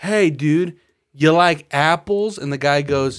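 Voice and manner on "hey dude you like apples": taunting, baiting delivery, loud and slow. Retelling a movie scene where he is taunting another guy: mock taunting. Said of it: "taunting this dude".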